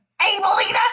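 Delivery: high, loud, playful and funny. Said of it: "she says it's so funny".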